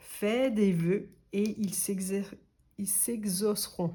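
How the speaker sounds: stumbling, tripping, word broken off and restarted. Card reader after over an hour of draws, stumbling over words. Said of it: "je bafouille vers la fin".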